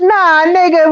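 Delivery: tiny, little squeaky voice. Retelling how Nikki talked over him, imitating a little squeaky voice. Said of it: "with a little squeaky voice".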